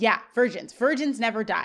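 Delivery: ordinary delivery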